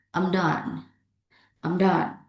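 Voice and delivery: done with pitch falling at the end. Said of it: "Falling intonations".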